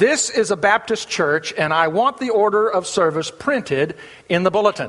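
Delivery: ordinary delivery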